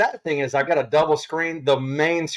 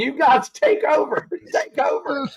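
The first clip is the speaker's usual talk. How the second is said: put-on screaming voice; 11 semitones higher than usual. Retelling a screen going blank when the show went live: retelling own screaming. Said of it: "I'm screaming at it".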